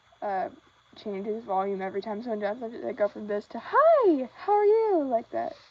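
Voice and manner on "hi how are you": very high-pitched voice, loud and slowly drawn out. Making a dragon puppet, showing how the voice changes, in a high-pitched voice. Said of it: "The high-pitched voice".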